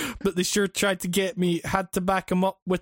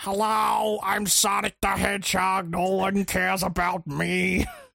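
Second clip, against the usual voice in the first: very slow, rough, creaky, drawn-out voice. Retelling someone's impression where Sonic talks: Larry King impression. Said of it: "Larry King's voice, the impression he does".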